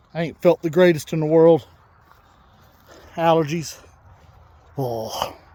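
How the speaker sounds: a little out of breath, slightly winded. Talking to viewers during a greenhouse build: a little out of breath. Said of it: "a little bit out of breath".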